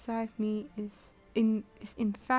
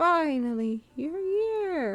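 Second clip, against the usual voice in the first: attempted high put-on old woman voice, drawn out; 5 semitones higher than usual. Reading a game character's line aloud: attempted old woman voice. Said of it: "I can't speak like a old woman".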